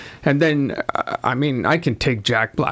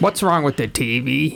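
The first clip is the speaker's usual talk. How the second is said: weird put-on little kid voice. Imagining a little kid watching the movie: imitating a little kid's voice. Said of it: "If I had a kid that sounded like I just sounded".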